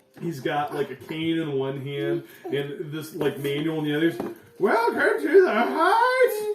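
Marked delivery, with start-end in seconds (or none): 4.6-6.5 put-on high-pitched voice of a very old man. Narrator voicing the oldest human the group has seen, welcoming them: very old man voice. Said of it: "the oldest human you have ever seen".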